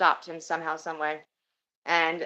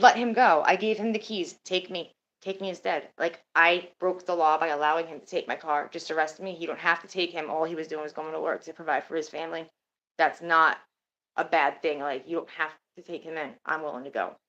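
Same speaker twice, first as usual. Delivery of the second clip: usual speaking voice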